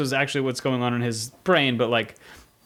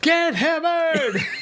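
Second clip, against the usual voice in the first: very high-pitched, mock shouted delivery. Retelling a lyric shouted while moving boxes: retelling a shout. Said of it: "I shouted".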